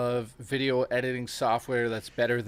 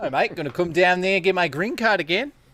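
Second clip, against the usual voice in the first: loud, high, fake put-on Australian accent; 6 semitones higher, 6 dB louder than usual. Doing accents while the other speaker teases, in a fake Australian-sounding accent. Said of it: "Why does every accent you do sound Australian?".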